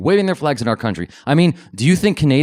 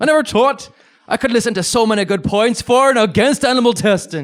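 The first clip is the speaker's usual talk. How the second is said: put-on Irish accent, pitched very high; 10 semitones higher than usual. Voicing a quoted man's words, putting on an Irish accent. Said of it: "I went with the Irish accent".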